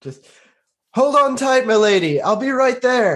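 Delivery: high, carrying yell. A player's character gallops after a lady in a chase, yelling after her. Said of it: "yelling after her the whole time".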